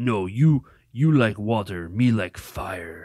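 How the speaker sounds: put-on character voice, each word drawn out very slowly. Retelling a comedy scene where Hulk answers Thor: Hulk voice. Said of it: "and Hulk's like".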